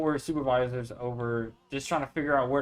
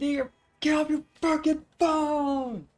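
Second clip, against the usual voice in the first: put-on angry yell, much higher. Describing warehouse work, the speaker quotes an older coworker on the intercom: retelling an angry yell. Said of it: "blaring it over the intercom".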